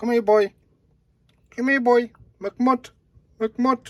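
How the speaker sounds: very high calling voice. Calling the hound over to him, in a dog-talking voice. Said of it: "That's my dog talking voice".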